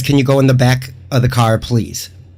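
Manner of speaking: ordinary talk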